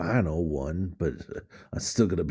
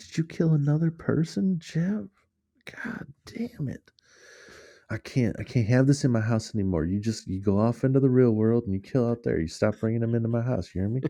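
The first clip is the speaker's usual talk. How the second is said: fake Southern accent, pitched up; 5 semitones higher than usual. Acting out a parent scolding a murderous child: put-on Southern accent.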